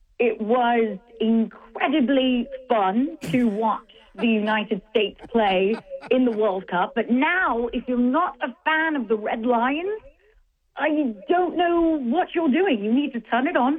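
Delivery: put-on English accent, done for show. Asked about England's soccer team, answering in a put-on English accent. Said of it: "Let me get my England voice now".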